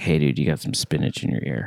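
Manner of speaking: friendly, hushed, confidential whisper. Acting out a friend warning about spinach in teeth: imitating a whisper.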